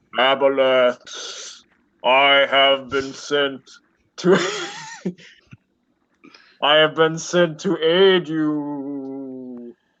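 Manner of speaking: eerie, disembodied, spooky voice, drawn-out "you". Hidden in murky water, throwing his voice to the aboleth, spooky voice. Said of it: "Not sure how to react to the spooky voice".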